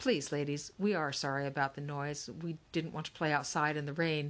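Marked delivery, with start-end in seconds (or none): none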